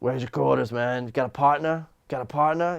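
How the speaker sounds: imitated drunk man's slurring speech. Retelling a pool game, quoting an old drunk guy: imitating a drunk man. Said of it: "drunk as shit".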